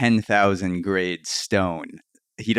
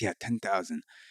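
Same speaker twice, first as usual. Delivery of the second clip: put-on broken English accent; 10 dB quieter than usual.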